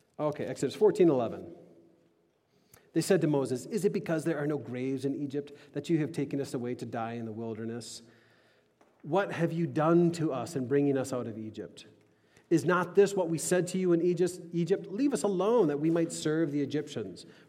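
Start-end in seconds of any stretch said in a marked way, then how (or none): none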